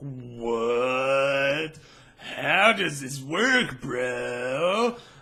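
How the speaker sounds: very slow, dazed, spaced-out voice, what stretched. Voicing a character who is tripping and staring at a dryer: acting high on drugs. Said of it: "because he is tripping and staring at this thing".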